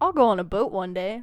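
ordinary talk

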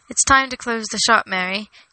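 ordinary delivery

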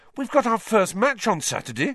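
indignant, outraged, very high-pitched. Narrator reads Harry's reply to Professor McGonagall: outraged.

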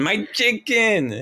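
shrill, very high, yelled-out cry. Being dragged away by ants in a made-up scene, yelling. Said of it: "and I'm yelling".

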